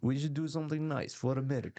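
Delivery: put-on Russian-sounding accent. Repeating the other speaker's line to show how it sounds, in a Russian-sounding accent. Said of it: "But it sounds like Russian almost".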